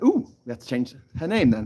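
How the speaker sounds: ordinary talk, nothing marked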